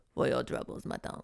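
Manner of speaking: rough, gravelly, rasping whisper. Retelling a man handing money out of a car: gravelly voice. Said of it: "in this gravelly voice".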